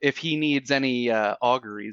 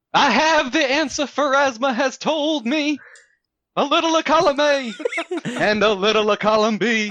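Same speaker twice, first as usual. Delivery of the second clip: high, pitched-up Southern preacher proclaiming voice; 12 semitones higher, 4 dB louder than usual. In a tabletop game, a character relays the deity's answer, in a southern preacher voice. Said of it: "You're like a southern preacher".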